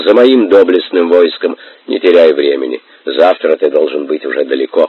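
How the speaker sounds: ordinary delivery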